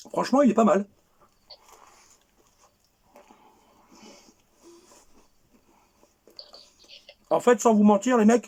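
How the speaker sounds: speaking with full mouth. Eating and telling the guys honestly what he thinks of it: talking with mouth full. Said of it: "je parle la bouche pleine".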